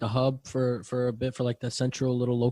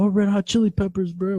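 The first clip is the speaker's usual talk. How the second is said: dumb-sounding, high, hollered-out yell; 7 semitones higher, 7 dB louder than usual. Retelling yelling out a request at a band: imitating own past yell. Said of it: "my dumb ass yelled out".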